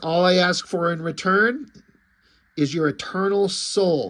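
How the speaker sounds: ordinary delivery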